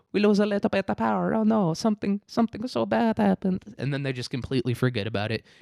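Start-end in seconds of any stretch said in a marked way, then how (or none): 0.1-3.6 very high-pitched, fake, bad Italian accent. Acting out Spaniards after losing power, in a bad Italian accent. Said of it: "so I'm gonna do an Italian".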